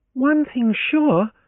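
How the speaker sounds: very high, scornful outcry. Leoncia answering Francis before the Solanos, crying out scornfully. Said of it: "Leoncia cried out scornfully".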